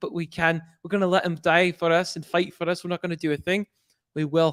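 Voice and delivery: put-on speaking in a Scottish accent. Retelling the son's line from an episode: Scottish accent. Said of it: "he had that Scottish accent for sure".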